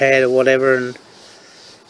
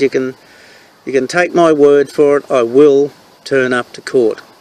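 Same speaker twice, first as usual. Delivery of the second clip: ordinary delivery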